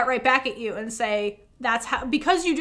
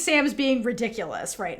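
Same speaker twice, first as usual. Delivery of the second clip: ordinary talk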